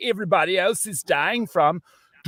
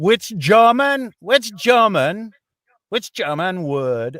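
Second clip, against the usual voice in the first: Trinidadian island accent; 4 dB louder than usual. Reading a trivia question to players with buzzers, in a Trinidadian accent. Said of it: "I'm going to say it in a Trinidadian accent".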